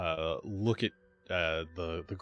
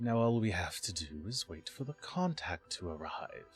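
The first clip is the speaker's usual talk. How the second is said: slow, creaking, drawn-out vampire voice; 4 dB quieter than usual. A vampire addresses his brethren while they wait for a contact: slow, creaky vampire voice. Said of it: "he says in kind of a slow, creaky voice".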